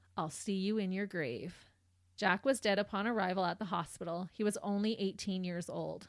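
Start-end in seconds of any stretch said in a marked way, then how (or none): none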